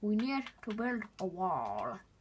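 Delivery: clumsy put-on American accent, slow and swooping. Quoting what someone would say, in a put-on American accent. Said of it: "that's probably not the best American accent to do".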